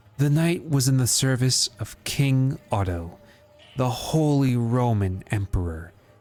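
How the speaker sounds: playful put-on seductive voice. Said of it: "Try reading it with your seducing voice".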